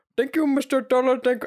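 very high-pitched, put-on Indian accent. Retelling what a woman said to him, the speaker mimics her: imitated Indian accent. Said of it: "Why are you making an Indian accent?".

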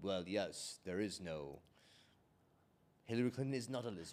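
grand, stately, majestic, deep-voiced delivery. Speaker voices a member of a species he is inventing; deep, majestic voice. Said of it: "like a deep, majestic, like Soromon type voice".

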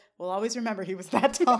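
ordinary talk

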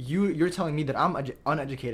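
ordinary talk

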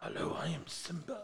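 breathy, hushed, softly breathed out. Answering a question about a favorite Disney character: Simba impression. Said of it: "That was not a bad impression".

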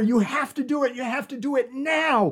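screamed, very loud delivery. Recounting a scene where one character screams at another, retelling a scream. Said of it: "she's screaming at her".

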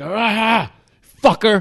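abrupt, unhinged, lurching outburst. Retelling a man suddenly lurching at him: imitating a crazy homeless guy. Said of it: "Like that".

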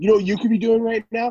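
high, loud, furious angry yell. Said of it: "Very angry, very angry roid rage man".

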